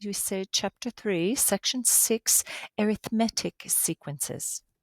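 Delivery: smart-sounding put-on British accent. Addressing listeners, demonstrating how to say the lesson title: put-on British accent. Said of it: "should have a British accent when you say that".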